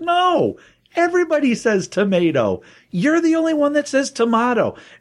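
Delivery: high-pitched put-on exasperated voice.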